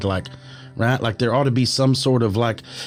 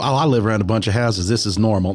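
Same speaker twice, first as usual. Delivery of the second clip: ordinary delivery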